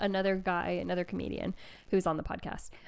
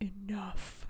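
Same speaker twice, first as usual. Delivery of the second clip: close-up, soft whisper of one word; 8 dB quieter than usual. Retelling how a man silenced a stranger in the crowd: imitating a whisper. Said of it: "comes up and whispers".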